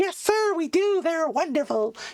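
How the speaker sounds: squeaky, very high, slow, cheery goblin voice. Narrating a story, the speaker voices a goblin answering the man who patted his head: happy goblin voice. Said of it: "he's super happy".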